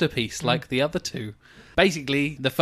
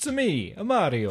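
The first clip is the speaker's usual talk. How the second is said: put-on Italian accent voice, higher pitch; 5 semitones higher, 4 dB quieter than usual. Introducing oneself on the show: Mario voice. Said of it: "Speaking of Italian sounds coming out of mouths".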